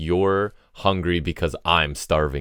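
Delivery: deliberate, slow, cold intensity in the delivery. Recounting a line someone said in a storyline, retelling an intense line. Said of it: "the intensity that kicks in when he's like".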